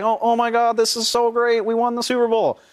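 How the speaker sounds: put-on gushing delight. Describing photos of a quarterback winning, mimicking a politician-like delivery. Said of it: "he's smiling like a politician".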